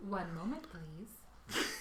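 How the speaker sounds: polite, courteous put-on customer-service telephone voice. Checking a website mid-conversation, stall the others in a polite phone voice. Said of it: "I love it when you do your phone voice".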